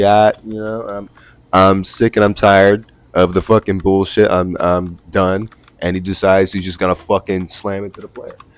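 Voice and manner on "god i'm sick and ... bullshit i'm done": normal talking voice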